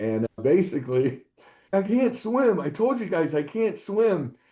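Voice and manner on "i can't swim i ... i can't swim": put-on furious yell, high, angry scream. Retelling a friend pulled from the lake: imitating someone screaming angrily. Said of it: "starts screaming and cursing at us".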